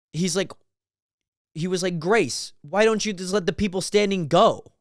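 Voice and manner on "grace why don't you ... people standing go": sarcastic, snide, with a snarky edge. Speaker retelling what a dad in a line said, mimicking a snarky tone. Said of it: "he says it like in such a snarky accent or like a snarky way".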